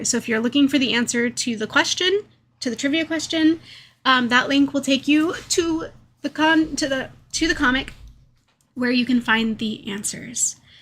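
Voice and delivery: rushed, rattled off, tumbling over words too fast. Explaining where the trivia answers can be found, talking too fast. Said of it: "I'm trying too hard to talk too fast".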